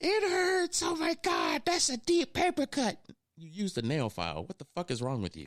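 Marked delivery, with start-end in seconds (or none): 0.0-3.0 put-on very high, swooping, shrieking scream. Retelling how someone cut his cuticles to the skin: imitating someone screaming. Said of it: "and he screams".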